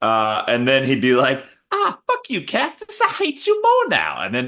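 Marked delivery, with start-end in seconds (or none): 1.7-4.2 lisping voice, pitched high with big swooping pitch. Imagining a boxer punching a cactus: Mike Tyson impression. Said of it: "I can't do a very good Mike Tyson".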